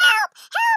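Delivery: shrill, very high, very loud yelling. Telling of coming out of the woods toward a house, retelling yelling for help. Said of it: "I'm starting to yell".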